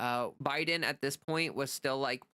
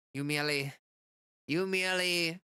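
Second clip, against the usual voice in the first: odd voice, stumbling and stalling at the start; 4 semitones higher than usual. Attempting a half-remembered movie quote, failed Bane voice. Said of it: "I just did some weird voice".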